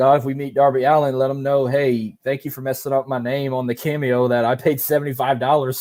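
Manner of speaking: ordinary talk, nothing marked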